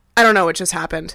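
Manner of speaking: ordinary talk, nothing marked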